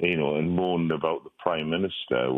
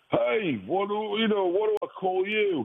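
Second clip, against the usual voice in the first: put-on bombastic, brash man's voice, much higher, slower. Retelling waking up in a ward to a man's question, imitating a bombastic voice. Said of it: "a guy with a very bombastic voice".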